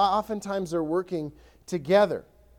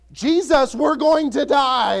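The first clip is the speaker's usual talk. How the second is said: exuberant, drawn-out, loud, high yelling; 6 semitones higher, 8 dB louder than usual. Acting out the disciples waking jesus in the storm: imitating an exuberant shout. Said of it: "probably a little more exuberant than that".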